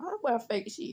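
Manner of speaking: quiet aside muttered under the breath. Retelling a remark made during a game, imitating muttering under breath. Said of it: "he said under his breath".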